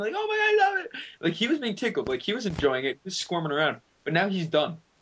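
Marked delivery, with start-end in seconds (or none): 0.1-0.9 very high, delighted mock yell, squealing. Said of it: "he was yelling".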